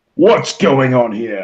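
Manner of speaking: big, looming, heavy-handed, imposing intimidating voice. A player voices his character looming over the Irish people, in a big booming voice. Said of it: "big booming voice".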